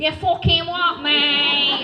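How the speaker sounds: put-on loud, slow Manchester accent.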